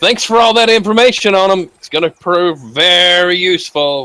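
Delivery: very loud, showy, drawn out. Player's character, leaving an office, speaks for everyone to hear: said very loudly. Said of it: "I'm going to say very loudly".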